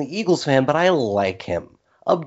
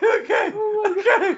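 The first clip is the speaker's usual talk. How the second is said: very high-pitched, giggling, laughing through the words. Reacting to an answer that's an answer by itself, laughing uncontrollably. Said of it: "I can't stop laughing".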